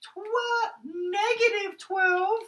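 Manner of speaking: silly put-on falsetto, very high and squeaky. Speaker works through a formula with the class, in a high-pitched voice. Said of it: "the high-pitched voice guy's back".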